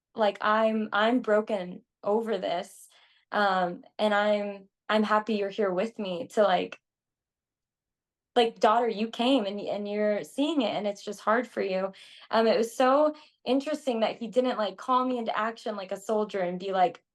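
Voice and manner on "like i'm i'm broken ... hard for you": usual speaking voice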